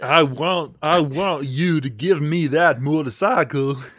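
put-on robot voice with Southern accent. Pitching a joke about a Southern Terminator, in a Southern Terminator voice. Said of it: "what if the Terminator got dropped in like the redneckiest part of Alabama?".

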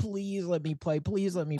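put-on high, rushed pleading like a little kid. Retelling begging little Michael to let you play: imitating own childhood pleading. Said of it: "I pleaded and I begged".

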